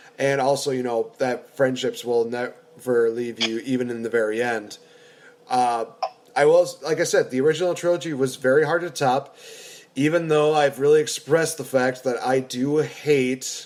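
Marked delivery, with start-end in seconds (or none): 12.8-13.7 the word hate emphasized. Discussing the original trilogy, stressing the word hate. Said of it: "and I emphasize the word hate".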